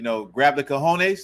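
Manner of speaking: usual speaking voice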